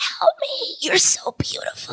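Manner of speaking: strained, choked-off whisper. Telling others about a choking man who begged for help, imitating a choking man. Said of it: "he was choking".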